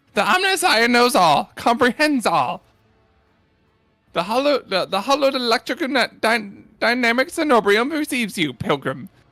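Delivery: brisk, curt, commanding military-style delivery. Voicing a man answering a pilgrim, curt, like a military command. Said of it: "responds curtly, as if giving a military command".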